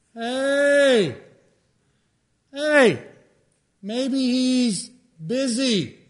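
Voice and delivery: very slow, high, mocking jeer with stretched "hey". Retelling the Scripture story of Elijah and the prophets of Baal, retelling Elijah's taunt. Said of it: "He starts taunting them".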